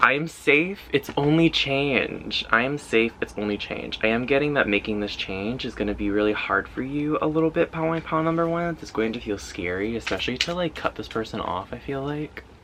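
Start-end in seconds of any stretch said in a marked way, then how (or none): 0.0-2.4 slow, emphatic affirming tone.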